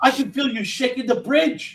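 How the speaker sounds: very high, pitched-way-up voice. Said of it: "he said it like".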